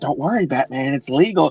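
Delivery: put-on villain voice. Retelling a joke about the Joker and Batman: imitating the Joker. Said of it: "He's like".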